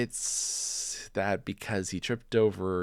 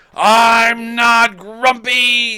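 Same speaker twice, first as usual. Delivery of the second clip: furious, very loud, shrill, high, booming angry shout; 17 dB louder than usual. Reading a story aloud, voicing the character after the others tease him, angry shout. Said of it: "shouted Jim and beat his chest".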